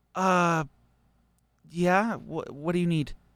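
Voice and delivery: slow, dazed, startled, bewildered caught-off-guard delivery. Voicing a character who snaps out of confusion when called: confused, startled. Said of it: "he snaps to and looks at you and goes".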